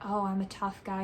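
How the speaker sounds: normal talking voice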